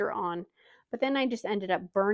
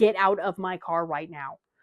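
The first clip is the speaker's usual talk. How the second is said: firm commanding tone, lower pitch; 3 semitones lower than usual. Retelling ordering a child out of the car: imitating own commanding tone. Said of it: "when I say it in a certain tone".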